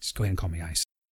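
hushed, very quiet, close whisper. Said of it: "he kind of just whispered in my ear".

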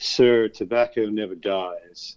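put-on weary, dry, tired, deadpan English accent. Retelling what the man behind the counter told him, imitating a dry, tired English voice. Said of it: "in a very dry, um, tired English voice said to me".

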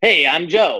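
odd, funny-sounding Chicago way of talking. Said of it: "why are you talking all funny".

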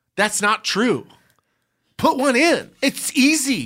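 furious, slow, very high-pitched yell. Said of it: "Why are you yelling?".

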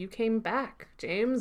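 small, hushed voice full of awe. Retelling a scene where Michael looks at James, imitating Michael's small awed voice. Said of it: "such a small, awe-filled voice".

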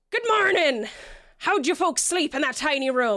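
high, called-out voice. Voicing the captain greeting the players from the wheel: Captain Marlowe shouting. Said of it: "and she shouts".

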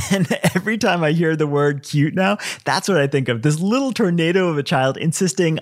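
plain

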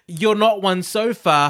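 condescending, high-pitched voice. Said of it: "it's like that".

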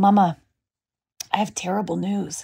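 put-on child voice, grave, expressionless deadpan. A mother retells what four-year-old Charlie told her, imitating Charlie, mock-deadpan. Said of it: "like completely deadpan".

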